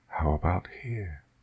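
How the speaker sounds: mocking, soft, hushed hissing. Narrator reading a voice answering the narrator's defiance, hissed. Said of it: "hissed the voice".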